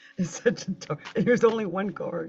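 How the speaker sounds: talking through held-back laughter. Reading out the only card drawn for Taurus, laughing while talking.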